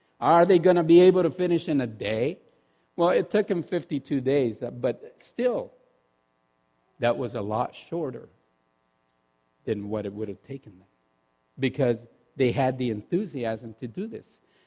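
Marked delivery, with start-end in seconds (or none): 0.2-2.4 put-on, loud, scornful, sarcastic jeering taunt. Speaker recounts how others mocked a group's enthusiasm, retelling a mocking question. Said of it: "It was sort of like sarcastic".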